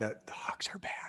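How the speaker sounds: very quiet, hushed whisper. Speaker announces they'll whisper their next remark to the others: whispering. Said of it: "I'm gonna whisper it".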